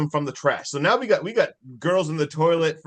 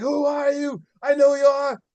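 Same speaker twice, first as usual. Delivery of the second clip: very high, mock, shrieking scream; 10 semitones higher, 3 dB louder than usual. Telling a Halloween party story, the speaker acts out a man at a kid: retelling someone screaming. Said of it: "Screaming at all the stuff at this kid".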